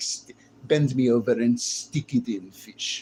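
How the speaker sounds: slow, put-on Russian woman's accent. Retelling what Russian women would say to him: imitating Russian woman's accent. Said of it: "the Russian accent with women. They'd be like".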